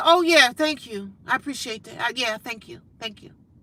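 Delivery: exaggerated, over-the-top gracious, overly kind politeness. Retelling own reply to a rude woman at the desk: retelling an overly kind reply. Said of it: "I know how to kill you with kindness".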